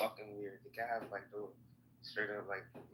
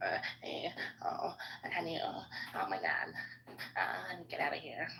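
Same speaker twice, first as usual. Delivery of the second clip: mocking high, slow cutesy voice from a man; 7 semitones higher than usual. Mocking another speaker in an argument: imitating a low-testosterone man. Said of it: "that's what low testosterone men sound like".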